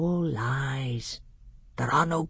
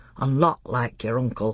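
usual speaking voice

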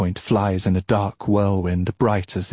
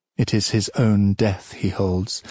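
ordinary delivery, nothing marked

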